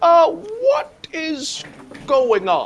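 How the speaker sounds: high, drawn-out, stretched nerdy voice. Recapping a plot to a listener, acting out Victor Timely's reaction; Victor Timely voice. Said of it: "what's that voice you're doing?".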